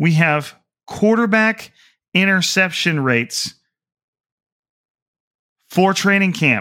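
slow, deliberate, spelled out word by word. Speaker on 49ers Twitter stats repeats the point, saying it slower. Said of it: "i'm going to say that again even a little slower".

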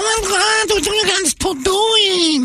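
put-on very high, drawn-out Puerto Rican New York accent. Mocking an actress's Puerto Rican New York accent: Rosie Perez accent. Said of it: "Rosie Perez".

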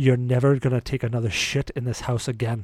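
put-on grave, very serious English accent. Retelling how he looked at Derek and spoke, imitating a dead-serious Englishman. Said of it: "the most serious voice you've ever heard an Englishman make".

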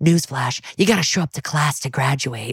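intimidating, menacing, close-up stage half-whisper. Retelling a detective leaning in close to a suspect: imitating a half-whisper. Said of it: "Stabler leans in and, like, whispers".

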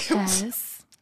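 soft little fake voice. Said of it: "in her little fake voice".

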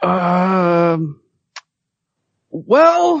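unhurried speech, stretched um. Imitating Scott after being asked to, slow talking. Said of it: "Should I do a Scott impersonation?".

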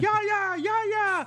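mock desperate, frantic shrieking, very high. Acting out a goal kick scene on the field, imitating Joe Hart screaming at Yaya. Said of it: "just screaming".

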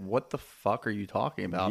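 ordinary delivery

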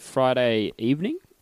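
puzzled, wondering voice.

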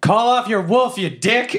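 very high, stretched-out, drawn-out yell in character. Yelling at a hobgoblin during a fight: yelling in character. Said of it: "And I yell".

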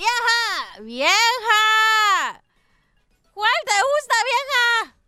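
put-on very slow, high drunk calling, "vieja" drawn out. Telling a joke about a husband coming home drunk: imitating a drunk husband. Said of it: "Pero hale como borracho".

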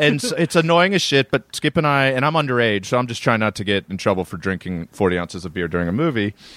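normal talking voice

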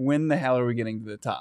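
usual speaking voice

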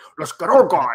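mock pompous blowhard voice. Repeating the general manager's line back: Dave Gettleman voice. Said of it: "the Dan Schneider, Dave Gettleman voice".

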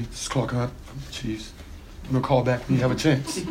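quick, hushed, flat monotone voice. Retelling a voicemail left by Clark Hunt of the Chiefs, Clark Hunt monotone voicemail. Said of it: "In a monotone voicemail".

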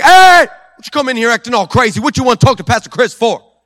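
very loud, sassy, attitude-filled confrontational tone. Retelling the assistant confronting an unannounced visitor: imitating assistant with sassy attitude. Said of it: "All the attitude, all the spicy".

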